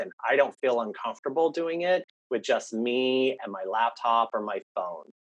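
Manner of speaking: ordinary talk, nothing marked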